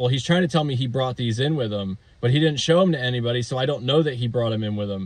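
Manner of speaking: plain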